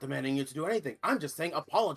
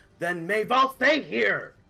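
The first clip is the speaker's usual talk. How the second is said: shouting loudly; 3 semitones higher, 7 dB louder than usual. A character yells at a woman who is walking away from him, yelling. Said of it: "yells at her".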